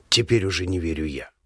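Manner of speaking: hollow, muffled, dull, breathy exhaled whisper. Answering the narrator who has just shouted at him, in a hollow whisper. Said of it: "выдыхает глухим шепотом".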